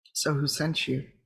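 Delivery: calm, low action-hero voice. A player leans in as close as possible to question someone, calm John Wick voice. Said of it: "in that very like calm John Wick voice".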